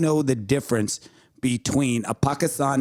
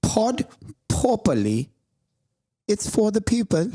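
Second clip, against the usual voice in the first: put-on English accent, slow and high; 8 semitones higher than usual. Retrying a line for co-hosts after stumbling over a lisp, in an English accent. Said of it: "That was English accent".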